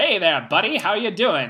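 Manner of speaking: put-on high, swooping old-time American patter. Imitating a film's theater producer who talks like an American stereotype: imitating an old-time American stereotype voice. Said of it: "he talks like an American stereotype".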